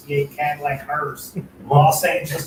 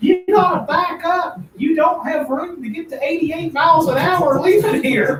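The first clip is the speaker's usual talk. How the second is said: loud yelling, pitched way up; 13 semitones higher, 6 dB louder than usual. Retelling what a guy yelled as the speaker was leaving: imitating someone yelling. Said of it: "He was yelling".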